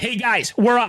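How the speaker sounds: mock commanding call. A caddie retells calling to his late players at the starter's table, retelling a commanding call. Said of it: "with a commanding tone said".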